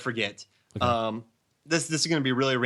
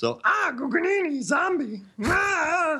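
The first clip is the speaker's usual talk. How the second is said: very high, squeaky, slow puppet voice, stretched "ah". Podcast host tries the voice after naming its original actor: Salacious Crumb impression. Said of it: "you just sounded like Fozzie the Bear doing his impression of, of the Salacious Crumb".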